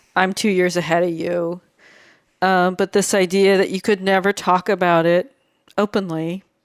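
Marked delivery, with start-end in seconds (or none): 0.2-1.6 imitated hushed, quiet voice, lower pitch. Retelling what a client said to someone in her office: imitating a hushed tone. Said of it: "respectfully in a hushed tone said".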